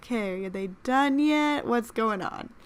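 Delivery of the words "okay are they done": ordinary delivery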